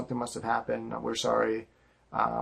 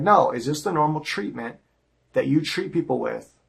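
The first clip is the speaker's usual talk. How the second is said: put-on, agitated, aggrieved, upset, worked-up voice; 4 semitones higher, 3 dB louder than usual. Retelling a phone complaint about held products: re-enacting own upset complaint. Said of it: "you need to calm down".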